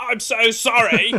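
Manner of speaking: loud, shrill, blaring robotic voice. Retelling how a bad phone line made them sound: robotic Dalek voice. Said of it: "presumably he was hearing".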